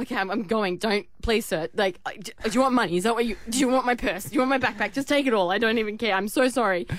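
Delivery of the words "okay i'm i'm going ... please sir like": ordinary delivery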